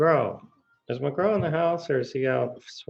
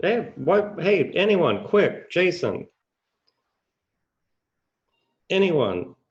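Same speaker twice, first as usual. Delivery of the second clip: put-on sharp, high, urgent bark; 6 semitones higher, 4 dB louder than usual. Recounting calling out to Jason and anyone nearby, retelling a sharp bark. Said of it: "you can tell my tonality when I bark like that".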